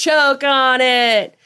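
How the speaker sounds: all-out, high-pitched screaming voice. Retelling a movie scene where a character gets ripped apart: imitating Rhodes screaming. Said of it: "and he's screaming, like".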